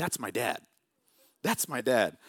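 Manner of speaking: put-on toddler voice, words said twice. Retelling what a daughter said on seeing Superman: imitating Aurora as a toddler. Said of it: "she would just go".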